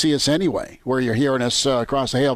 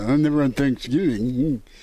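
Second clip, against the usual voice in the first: mock snooty tone, slower. Teasing the other speaker by repeating their words in a mock-uppity tone. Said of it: "you sound like a little uppity when you go".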